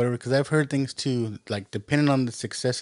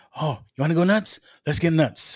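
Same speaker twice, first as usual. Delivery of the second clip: crazy, unhinged, wild outburst; 4 semitones higher, 4 dB louder than usual. Retelling a famous movie scene: crazy Michael Keaton voice. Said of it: "when Michael Keaton gets all crazy and he's like".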